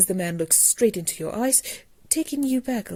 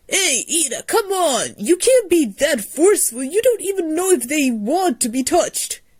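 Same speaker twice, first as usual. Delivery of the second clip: almost too happy, ecstatic, high, upbeat, over-cheerful; 7 semitones higher than usual. Calling out to Ida, ecstatic and almost too happy. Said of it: "His energy seems to be ecstatic, happy, and almost too happy".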